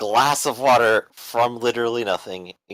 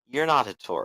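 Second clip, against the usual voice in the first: disbelieving, unimpressed, unconvinced tone; 5 dB quieter than usual. Voicing a character who stares down an impostor: flat unimpressed denial. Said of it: "cross his arms and, like, stare at him and go".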